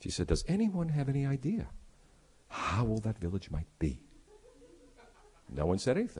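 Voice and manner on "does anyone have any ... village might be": dramatic, hushed half-whisper. Retelling a tour guide drawing the group in: imitating a guide's half-whisper. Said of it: "really lowered her voice to a whisper".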